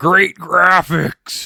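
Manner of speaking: yelling at high pitch. Retelling a line from the movie: imitating Freddy Krueger yelling. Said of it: "Freddy literally yells".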